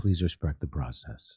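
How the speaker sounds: very deep, very soft, hushed dulcet voice. Describing how a man answers being called a war criminal, imitating his low dulcet tone. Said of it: "he just says in a low voice, in a dulcet tone".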